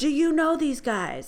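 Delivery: yell called out over crowd noise. Retelling how a woman questioned her, the speaker re-enacts the woman yelling in her ear. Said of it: "she yells in my ear".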